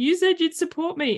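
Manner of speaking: very high, tearful crying through the words. Retelling an argument over biscuits, quoting own words to him while crying. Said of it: "crying going".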